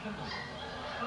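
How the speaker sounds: soft, slow whispering.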